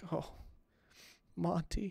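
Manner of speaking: breaking down, close to tears, breathy near-whisper. Voicing a woman who hears of an older gentleman; breaking down in tears. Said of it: "she starts to break down even more".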